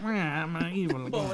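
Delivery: mock out-the-side-of-mouth speech. Describing an animated evil character, the speaker imitates him talking out the side of his mouth. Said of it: "he's talking out the side of his".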